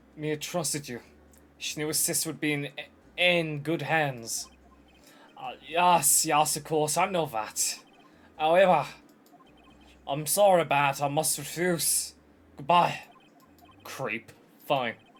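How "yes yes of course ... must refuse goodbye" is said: put-on Scottish accent. Streamer voicing a game lawyer refusing a case; Scottish lawyer voice. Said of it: "why is there a British policeman in Japan? Secondly, why is there a Scottish lawyer in Japan? / [name], / why is there a Scottish lawyer in Japan?".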